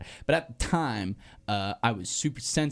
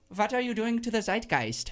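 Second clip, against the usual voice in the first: very high, leaned-into, put-on German accent; 12 semitones higher than usual. Trying to lean into an accent, the speaker attempts a German accent. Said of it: "so say it with a German accent".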